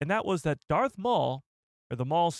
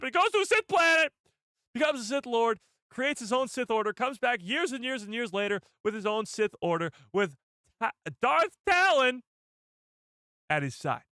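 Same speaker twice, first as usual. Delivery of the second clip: worked-up, excited, high-pitched yelling rant; 7 semitones higher than usual. Retelling a Sith Lord's backstory, excited yelling. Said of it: "I don't know why I'm yelling so much today".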